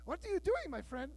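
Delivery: put-on Brazilian-accented English. Quoting a gondola worker from Brazil questioning the speaker, in a put-on Brazilian accent. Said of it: "That's my Brazilian accent".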